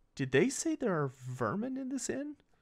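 low, quiet whisper. Narrating a scene, the speaker voices a man addressing the listener in a low whisper. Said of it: "in a low whisper he goes".

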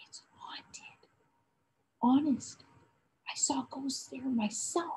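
voice dropped to a hushed, spooky, mysterious whisper. Speaking to Joris, he adds something in a mysterious whisper. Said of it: "He let his voice drop into a mysterious whisper as he added".

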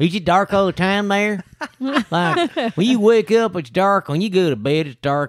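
very high, put-on generic Southern accent. Imitating someone's questions during an Uber ride, generic Southern accent. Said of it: "just basically a generic Southern accent".

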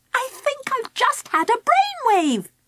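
very high, thrilled, eager excited voice. At the gifts counter, Angela turns to Charlie, excited. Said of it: "she said excitedly".

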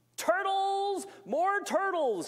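very high, loud, braying bellow. Narrator reads the royal figure calling out for turtles, bellowing and braying. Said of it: "he bellowed and brayed".

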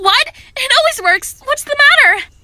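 high, loud, panicky, alarmed disbelief. Bliss, when the Headmistress says her magic won't work, freaked out. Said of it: "(freaked out)".

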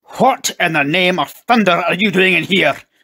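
enraged, furious, loud, high bellow. A furious father finds his children in the drawing room, furious bellow. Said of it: "he bellowed".

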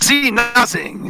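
put-on Mexican accent. Answering as Uncle Eddie, who is in the bathroom: put-on Mexican accent. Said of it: "he's now Mexican".

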